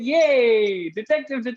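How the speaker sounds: eager, excited, high, drawn-out cheer. Game host shows players how to react to the next round, excited. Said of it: "Be a little excited".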